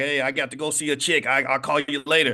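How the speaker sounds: dismissive, brushing-off tone in an acted voice. Acting out the father brushing off his kids: imitating a dad brushing off his kids. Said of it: "And you're like".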